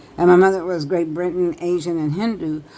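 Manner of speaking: normal talking voice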